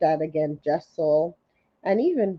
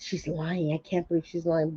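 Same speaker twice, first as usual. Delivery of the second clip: spiteful, mean, catty half-whisper; 9 dB quieter than usual. Retelling what Erin said about Brynn during her story: imitating Erin's mean half-whisper. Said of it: "being mean, kinda whispering to Ubah".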